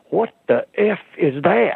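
mock, high blurt, a bit too loud. Retelling someone jerking back in the seat and exclaiming: imitating a too-loud exclamation. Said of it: "he said it a little too loud".

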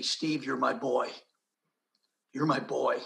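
softly spoken words. Speaker retells what a man said to him early one morning: retelling quiet words. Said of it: "But very quietly".

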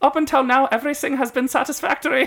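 very high put-on German accent. Retelling a story, quoting his long-awaited reply to them, in a put-on accent. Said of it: "I guess I am".

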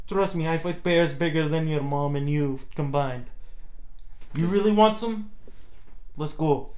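put-on, tough-sounding Russian accent. Joining a friend's bit, the speaker speaks in a put-on russian accent. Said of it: "you hear a person with an accent like that".

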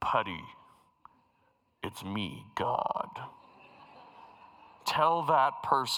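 very low, deep, booming divine voice. Speaker imagining God speaking to them from behind the screen: booming God voice. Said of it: "there'd be this booming voice".

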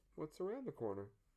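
homespun, down-home voice. Showing how the town motto has to be said, really folksy. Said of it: "really folksy".

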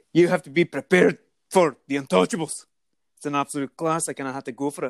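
put-on Scottish accent. Told to say the first one in a scottish accent, the speaker does it. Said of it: "you just say the first one in the Scottish accent".

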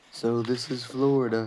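ordinary delivery

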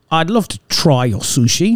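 Queen's English accent. Warming up to say a line in an English accent, using Queen's English accent. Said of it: "That was Queen's English".

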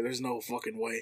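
soft half-whisper under the breath. Retelling what the store manager said on seeing the couple: imitating someone half-whispering. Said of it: "I just hear him whisper".

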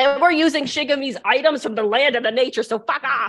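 very high-pitched, shrill shouting. A character tells off another character over Shigami's items, yelling. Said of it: "I'm really sorry for yelling at you like that".

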